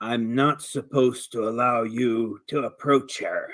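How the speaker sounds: low, deep-pitched voice. Voicing an unseen guard who warns players away from her: deep voice. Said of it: "you hear a deep voice saying".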